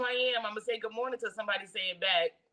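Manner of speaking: ordinary talk, nothing marked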